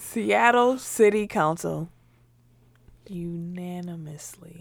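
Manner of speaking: slow, unhurried pace of delivery. On a second take of a news read, speaking slowly. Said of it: "you said it so slow".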